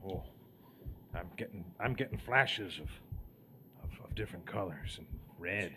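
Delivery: disoriented, dazed tone. An adventurer senses something down here and tells Wendell: dazed, disoriented. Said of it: "oh, I feel like shit".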